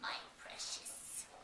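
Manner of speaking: breathy, hushed, whispered creature voice. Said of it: "there's this kind of schmiegel".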